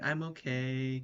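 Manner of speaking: small, tiny put-on voice with drawn-out "okay". Imitating how someone would say they're okay, in a small little voice. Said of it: "you'd say it in a little voice".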